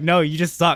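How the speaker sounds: normal talking voice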